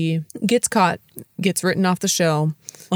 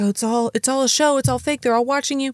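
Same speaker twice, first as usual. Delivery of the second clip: put-on frantic yell, much higher; 8 semitones higher than usual. Retelling how Sylvia tries to tell Truman, imitating Sylvia frantically yelling. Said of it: "very frantically yelling like".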